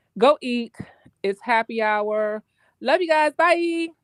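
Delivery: very slow, loud, drawn-out, a bit too cheerful. Signing off from a call-in line: sounding a little too happy. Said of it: "She sounds a little too happy".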